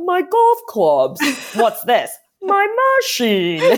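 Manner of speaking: slow, swooping mobster bodyguard voice. Quoting a favorite line of the mobsters checking into the hotel, mobster bodyguard voice. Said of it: "I love in his voice".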